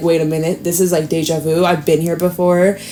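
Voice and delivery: ordinary talk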